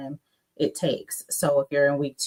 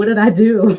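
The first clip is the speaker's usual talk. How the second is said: play-acted tearful crying wail, very loud and high; 6 semitones higher, 10 dB louder than usual. Retelling calling a father from basic training, imitating own past crying. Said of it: "I remember calling him crying".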